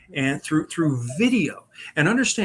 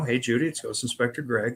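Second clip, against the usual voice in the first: ordinary delivery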